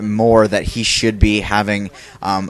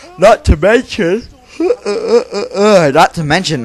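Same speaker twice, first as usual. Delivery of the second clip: words stretched through very high, loud, drawn-out yawn; 10 semitones higher, 5 dB louder than usual. Commentator talking to viewers after little sleep, yawning. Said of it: "I'm sorry, I'm yawning, guys".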